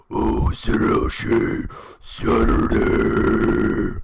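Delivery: very loud, rasping, rough growl. Answering a chat request to say the catchphrase: put-on growl. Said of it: "a growl".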